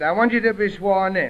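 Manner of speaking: normal talking voice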